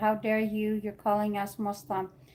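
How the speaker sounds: ordinary delivery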